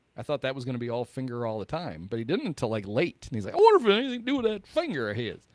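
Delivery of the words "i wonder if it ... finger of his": put-on high, loud, folksy Southern accent. Retelling a commentator's remark about a finger: Collinsworth's weird accent. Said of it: "Where did Collinsworth get that weird accent?".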